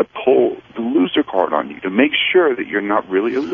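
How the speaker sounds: ordinary talk, nothing marked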